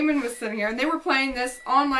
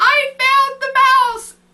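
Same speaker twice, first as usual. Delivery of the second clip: shrieking scream, very high and very loud; 12 semitones higher, 10 dB louder than usual. Retelling answering a husband about the mouse, imitating a scream. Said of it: "And I screamed".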